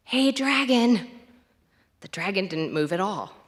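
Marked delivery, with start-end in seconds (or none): 0.1-1.0 very soft whisper, higher pitch. Narrator reads a character whispering to the sleeping dragon, very soft whisper. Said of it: "whispered very softly".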